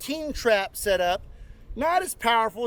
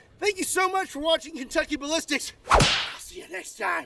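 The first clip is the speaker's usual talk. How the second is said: out of breath, winded, panting, short of air; 3 semitones higher than usual. A video host signs off to his viewers: out of breath. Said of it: "I'm out of breath".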